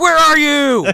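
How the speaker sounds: play-acted very high, loud screaming. Retelling a movie scene, the boyfriend calls for her: imitating a scream. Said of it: "He's, like, screaming".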